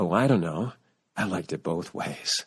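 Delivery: low, sexy, sultry, smoky tenor voice. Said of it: "in her sexy, sultry, smoky tenor voice goes".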